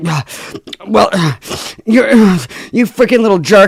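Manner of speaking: put-on high, loud, huffing, out-of-breath voice. Imitating someone gasping for breath between insults: imitating someone gasping between insults. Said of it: "gasping for breaths in between his insults".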